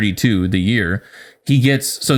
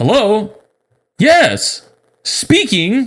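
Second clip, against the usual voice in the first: very high, swooping sing-song voice; 10 semitones higher than usual. Making fun of your dad, do an impression of dad answering the phone. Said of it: "that's literally like my dad right there".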